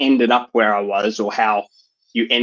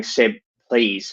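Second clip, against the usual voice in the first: put-on, defeated, pleading tone. Retelling a father sitting there pleading: imitating a defeated plea. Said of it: "he's sitting there defeated".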